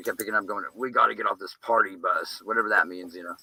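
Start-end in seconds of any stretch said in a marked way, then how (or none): 0.7-2.4 rasping, rough-edged, raspy recorded-sounding voice. Retelling a voice picked up on their audio: imitating a raspy voice. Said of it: "this raspy, raspy voice".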